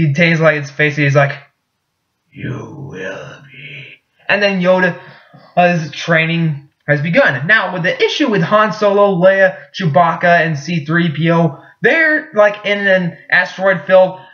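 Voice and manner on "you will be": stony, stone-cold, very quiet, barely whispered voice. Retelling a Star Wars scene, Yoda replying in his stone voice. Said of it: "Yoda gets like this stone voice".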